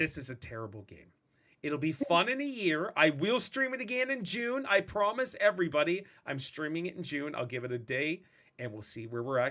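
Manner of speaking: normal talking voice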